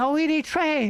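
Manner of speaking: heavy exaggerated put-on Chinese accent, broken English, high-pitched. Retelling a Warcraft trade with a player whose English was terrible, in an exaggerated Chinese accent. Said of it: "really Chinese accent".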